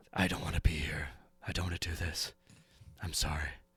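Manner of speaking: barely-there, soft, hushed whisper. Voicing little Bubo close to Aelric's ear: whispering. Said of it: "kinda whispering".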